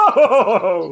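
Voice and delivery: high, loud, nervous laughing.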